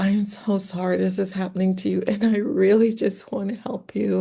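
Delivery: mock tearful crying in a woman's voice. Speaker retells a woman breaking down in front of a seller, imitating her crying. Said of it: "broke down into her little female cry".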